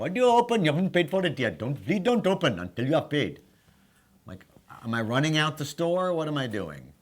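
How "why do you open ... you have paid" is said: irritated, annoyed, scolding tone with voice raised. Retelling the clerk's repeated scolding over a drink opened before paying, imitating the store clerk's voice. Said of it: "where did you get that voice from?".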